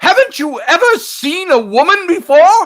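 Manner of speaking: loud, very high voice cracking mid-line. Recalling what a fellow actor said in a scene, the speaker quotes him imitating his cracking voice. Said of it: "he had his little breaking voice thing".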